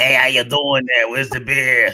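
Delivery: put-on ant voice with Boston accent. Speaker doing a skit of an ASMR channel lineup, as the Bostonian ant. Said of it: "Bostonian ant".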